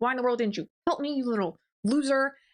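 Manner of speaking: put-on furious, angry, accusing outburst. Retelling a book character confronting another character: imitating someone angrily fighting. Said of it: "She immediately just starts fighting him".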